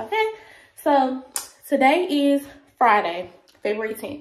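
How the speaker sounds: winded, breathless, panting, still catching breath. Vlogger who just ran up the stairs, giving an update: out of breath. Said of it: "I'm breathing hard because I just ran up the stairs".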